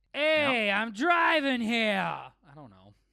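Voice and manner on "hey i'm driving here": angry, yelling New York cabbie voice, higher and louder. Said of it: "impersonate a New York cab driver yelling at another driver".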